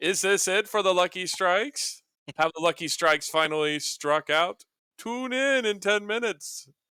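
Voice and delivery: loud radio announcer voice. Sending the show off to a ten-minute break, in an announcer voice. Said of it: "an announcer voice that sends us off".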